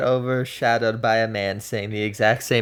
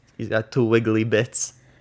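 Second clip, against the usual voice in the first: put-on New York gangster-style accent. Quoting a line from a video about Harry: New York gangster voice. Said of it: "Why did you sound like a gangster from New York?".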